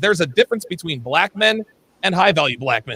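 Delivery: ordinary delivery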